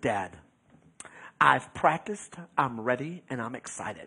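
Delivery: put-on typical teenager manner. Retelling how a thirteen-year-old daughter answered before her first race: imitating daughter's teenager way. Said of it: "in kinda her teenager way".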